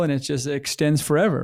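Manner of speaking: usual speaking voice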